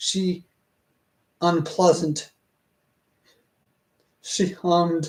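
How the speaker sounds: put-on British accent. Reading sentences aloud and trying out wordings, using a British accent. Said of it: "since I'm using the British accent".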